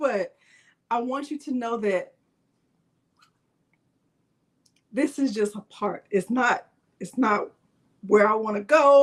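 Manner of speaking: emotional, earnest, feeling welling up mid-sentence. Telling the listener you want them to know something, getting emotional. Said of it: "I don't know why it's making me emotional".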